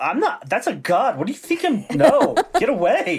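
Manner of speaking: very high-pitched, squeaky, protesting brush-off tone. Retelling the stable guy refusing to register a god: imitating the stable guy refusing. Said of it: "he's like".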